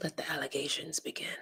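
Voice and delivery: whispered, put-on masked superhero voice. Joking around, delivering the line in a Batman voice. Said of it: "That's in my Batman voice".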